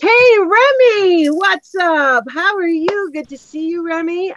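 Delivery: high, slow excited voice.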